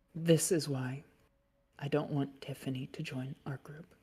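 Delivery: whispering through tears. Voicing a character who looks up in tears: tearful whisper. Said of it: "and she whispers".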